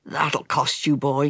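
threatening, menacing growled voice. A wounded man threatens the boy who stabbed him, growling. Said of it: "he growled".

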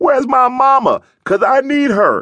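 put-on very high, wailing ugly crying. Recalling crying under a helmet, the speaker acts out the ugly cry: mock bawling. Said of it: "It was a bawling, snot coming out".

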